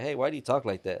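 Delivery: ordinary talk, nothing marked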